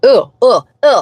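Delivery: grossed-out, disgusted groans and noises of dislike. Retelling hearing the drive-thru AI voice: retelling a disgusted reaction. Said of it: "did not like that".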